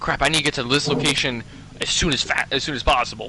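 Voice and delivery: normal talking voice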